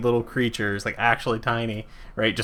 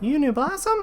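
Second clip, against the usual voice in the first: tiny, very high little voice. Speaking in the secret druid language: tiny little voice. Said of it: "a tiny little voice in Druidic".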